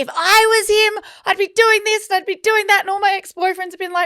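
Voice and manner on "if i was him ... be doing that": very high, worked-up, excited shouting. Describing watching the UFC, re-enacting screaming at the screen. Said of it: "I'm screaming at the screen".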